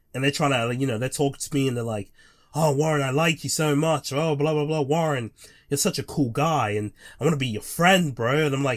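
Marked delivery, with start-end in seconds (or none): 2.5-8.4 put-on, sugary, gushing fake friendliness. Retelling how someone fake talks to them: imitating fake flattery. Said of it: "someone's trying to be fake with me".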